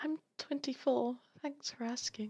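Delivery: whispering under breath. Answering in character after the others compare ages: whispering under her breath. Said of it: "Aura just whispers under her breath".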